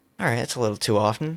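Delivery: mock muttering. Retelling what a woman examining their teeth said, imitating a mutter under breath. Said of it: "under her breath goes".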